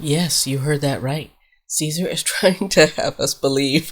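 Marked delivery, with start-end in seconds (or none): 1.7-3.9 talking through laughter. Trying to tell some news but breaking up: laughing while talking. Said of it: "I can't even get it out without laughing".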